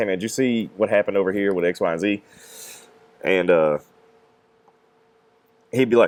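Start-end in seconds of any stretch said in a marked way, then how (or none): none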